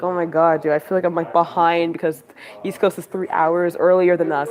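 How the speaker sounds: normal talking voice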